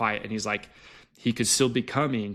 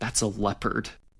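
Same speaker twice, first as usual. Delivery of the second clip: quiet hushed whisper. Retelling what he whispered to her when something was heard behind them, whispering. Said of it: "he whispers to me and he's like".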